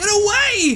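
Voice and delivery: very high, loud desperate screaming.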